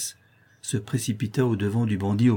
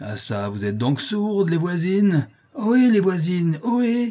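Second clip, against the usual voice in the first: vile, rough, husky, hoarse, raucous, pitched up; 8 semitones higher than usual. A man pounding on the door calls to the neighbours inside: vile, hoarse, raucous voice. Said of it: "Une voix ignoble, rauque, enrouée".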